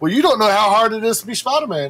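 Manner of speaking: ordinary delivery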